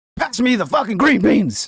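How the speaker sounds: exasperated high yell. Imagining Thanksgiving dinner with Stephen A: imitating Stephen A yelling. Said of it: "calm down, Stephen A".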